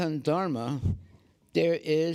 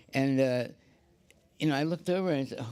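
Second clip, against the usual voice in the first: usual speaking voice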